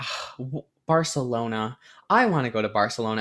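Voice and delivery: put-on sad voice. Retelling a movie scene where characters long to travel: imitating sad characters. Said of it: "they're so sad".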